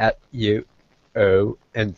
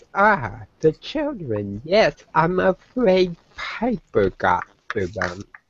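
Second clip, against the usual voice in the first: giggly, high-pitched dryad voice; 7 semitones higher than usual. Voicing the dryad answering about the children: voicing a giggling dryad. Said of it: "he lets out a giggle, and says".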